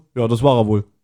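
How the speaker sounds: mock deadpan, low, flat, dry, no emphasis. Retelling a scene, quoting a character's answer: acting out a dry delivery. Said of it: "so ganz trocken so".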